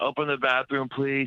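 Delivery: acted, pushy, insistent half-yell. Telling of a man at a McDonald's with locked bathrooms: retelling a man half-yelling. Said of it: "He's kind of yelling it".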